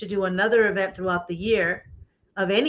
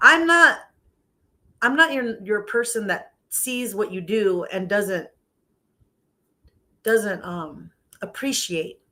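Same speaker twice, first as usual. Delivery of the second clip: emotional, halting voice, words coming apart, stumbling. Thanking people who played the speaker's music, emotional and losing words. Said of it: "I'm like losing my words here because I get all emotional".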